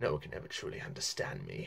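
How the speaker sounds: raspy, croaky, breathy whispered voice. Imitating an actress playing a character: raspy croaky Nicole Kidman voice. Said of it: "her voice is raspy and very kind of croaky".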